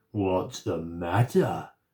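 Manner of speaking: low, menacing, growling monster voice. Narrator reads the terrible monster's words to Molly, in a growling monster voice. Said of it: "growled the terrible monster".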